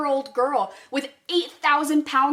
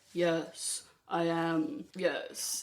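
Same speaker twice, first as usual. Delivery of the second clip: deep, hushed, slow regal voice; 9 semitones lower, 11 dB quieter than usual. Imitating how an actress talks as a queen, in a deep, slow, regal Keira Knightley queen voice. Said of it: "talk deep and slow and sound regal".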